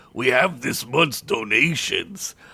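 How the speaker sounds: gruff, rough-edged orc voice. Reading a story aloud, an orc speaks through an oaken door: gruff orc voice. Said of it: "a gruff voice of an orc said".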